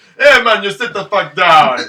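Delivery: laid-back put-on Jamaican accent, loud and drawn out. Speaker riffing on a Jedi master's voice with a friend: mock Jamaican accent as Kit Fisto. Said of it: "Kit Fisto talks with a Jamaican accent".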